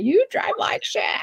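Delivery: mock very high, mild yell. Retelling what a looped-out Mom yelled while being driven: imitating someone yelling. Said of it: "yelling at me".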